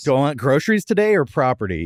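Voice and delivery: ordinary talk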